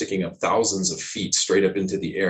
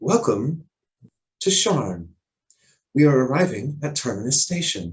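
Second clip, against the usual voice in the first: thin, tinny, high, sing-song train announcer voice; 5 semitones higher than usual. A storyteller voices an announcement to a whole train in a tinny, high-pitched voice. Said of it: "surprisingly tinny, uh, high-pitched voice".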